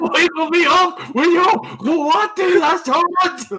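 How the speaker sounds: shouting. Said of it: "Yelling at the karate school".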